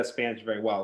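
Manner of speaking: plain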